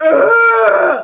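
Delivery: high, loud, agonized scream. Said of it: "some dude was like".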